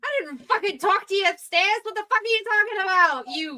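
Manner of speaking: angry, confrontational yelling. Voicing a character getting in someone's face: furious in-your-face yelling. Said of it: "in your face".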